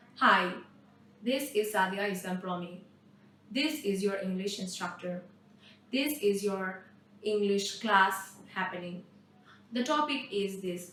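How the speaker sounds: low, flat, robotic machine-like monotone. Showing how speaking only in simple sentences sounds: robotic monotone. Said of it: "I sound like a robot".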